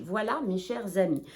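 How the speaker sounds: ordinary talk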